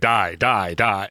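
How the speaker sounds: strange, deep, human-sounding creature voice. Game narrator voices a raccoon scratching a player: weird deep human voice. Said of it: "its weird, deep human voice going".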